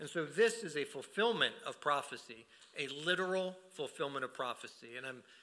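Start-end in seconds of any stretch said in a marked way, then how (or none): 2.8-5.0 the word "literal" stressed hard. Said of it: "I'm emphasizing the word literal".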